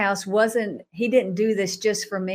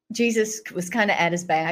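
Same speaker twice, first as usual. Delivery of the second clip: plain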